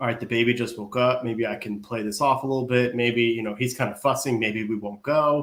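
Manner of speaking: ordinary talk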